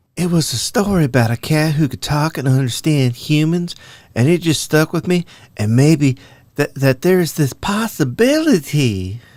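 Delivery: high Southern belle voice with a lisp. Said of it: "she's a Southern belle with a lisp".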